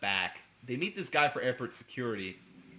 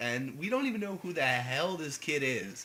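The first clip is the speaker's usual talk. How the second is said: ordinary delivery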